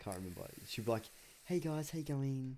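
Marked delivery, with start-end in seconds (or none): 1.4-2.6 fake, high, innocent phone voice. Imitating a sister answering a work call right after an argument: imitating sister's phone voice. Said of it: "she'll change her voice like that".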